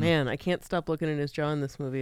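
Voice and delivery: ordinary talk, nothing marked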